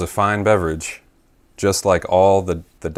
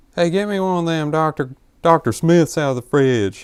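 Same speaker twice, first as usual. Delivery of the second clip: very high put-on child voice with an accent; 9 semitones higher than usual. The speaker acts out their kid self, in that accent. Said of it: "I just have that accent for no reason".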